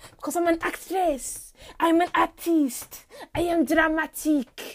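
bad put-on French accent. Tired actress vowing to keep going, declaring herself dramatic: bad French accent. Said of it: "Excuse the bad French accent".

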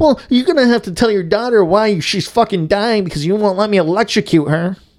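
put-on very high, shrill childish tantrum yell. Imagining the man shouting while moving his machinery out: imitating Orville Redenbacher shouting in a tantrum. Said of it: "But it's Orville Redenbacher doing it".

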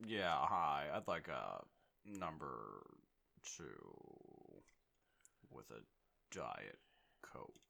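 very slow, drawn-out delivery. Imagining a drive-thru customer ordering food: Ted Levine voice. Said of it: "Ted Levine rolls through".

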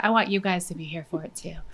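soft, serious motherly mom voice. Speaker urging listeners to join a little exercise, serious mom voice. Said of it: "That was my serious mom voice".

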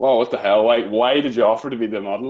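ordinary talk

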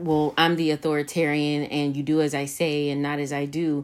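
ordinary talk

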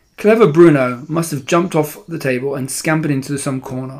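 ordinary talk

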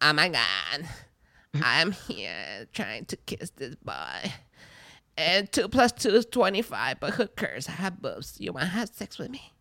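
very quiet, soft, put-on ditzy girl voice.

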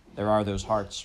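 ordinary delivery, nothing marked

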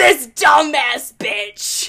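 loud, slow demonic snarl. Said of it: "I'm gonna try to imitate it".

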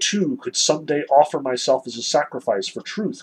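ordinary talk

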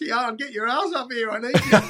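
mock, shrill, very high hollering. Retelling calling a grandson up for help: imitating own yell. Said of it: "so I yelled out".

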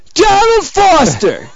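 very high, loud, full-out yell. Offering on the show to yell the professor's name: yelled name 'Donald Foster'. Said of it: "I'll yell it if you want".

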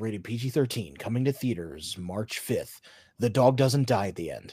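soft, little movie trailer narrator voice. Retelling how someone announced a film's release, in a movie trailer narrator voice. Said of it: "Like that little narrator voice at the end of a trailer".

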